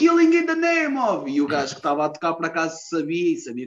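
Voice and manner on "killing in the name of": acted, loud, high-pitched shouted call. Retelling shouting to a musician about to play at the bar: re-enacted shout. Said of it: "eu gritei".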